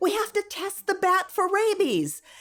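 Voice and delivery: loud yell. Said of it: "And so I yelled".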